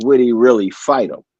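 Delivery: sarcastic delivery. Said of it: "I'm putting a bit of sarcasm on it".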